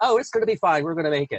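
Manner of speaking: high, smiling, cheery, reassuring tone. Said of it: "I'm smiling and saying".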